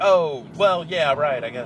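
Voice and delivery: slow, lukewarm, unimpressed, underwhelmed tone. Describing how players react after trying the game, mock-underwhelmed reaction. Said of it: "plays it and goes like".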